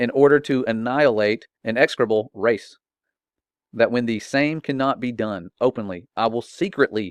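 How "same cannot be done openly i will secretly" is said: ordinary talk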